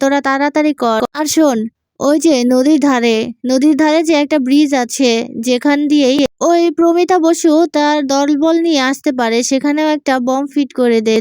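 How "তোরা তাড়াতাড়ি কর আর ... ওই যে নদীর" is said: usual speaking voice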